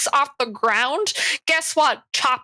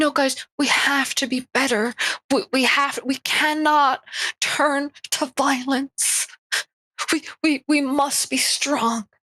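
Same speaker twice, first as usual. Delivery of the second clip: put-on sympathy-seeking voice, slower; 2 semitones higher than usual. Mocking how a woman performs for sympathy with facial expressions: mock sympathy-seeking voice. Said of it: "voice that they do when they need sympathy".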